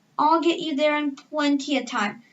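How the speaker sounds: plain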